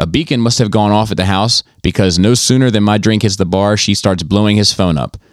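ordinary delivery

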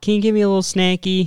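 high, mock child yell. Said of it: "yelling out the window".

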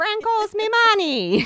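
loud, repeated squawking bird call. Retelling a story, quoting a character squawking a line. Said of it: "he's squawking".

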